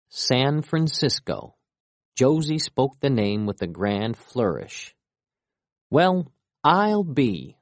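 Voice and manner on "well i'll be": gleeful, delighted, high exclamation of wonder. As Josie announces the city's name, Hiller responds gleefully. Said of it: "Hiller said gleefully".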